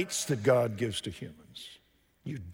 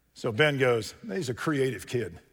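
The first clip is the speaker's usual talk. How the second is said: usual speaking voice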